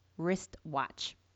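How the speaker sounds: very slow, word-by-word, each word spaced. Dictating a tongue twister for the listener to write down: speaking very slowly. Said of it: "I'll say it very slowly".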